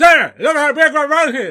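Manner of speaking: mock, very high, very loud mouth-stuffed voice. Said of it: "with the big giant sandwich in his mouth".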